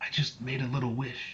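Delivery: hushed, close, secretive half-whisper. Voicing a character who leans in close: half-whispering in character. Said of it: "leans forward and whispers in your ear".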